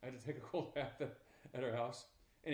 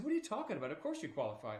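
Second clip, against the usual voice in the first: acted, swooping, insistent, nearly angry tone; 3 semitones higher than usual. Retelling what a recruiter said to him: imitating someone almost mad. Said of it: "he was almost mad at me".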